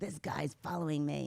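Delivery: quiet, mock irritated, annoyed mutter. Speaker recounts getting out after being followed all the way there, retelling being mad. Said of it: "I got out and I was mad".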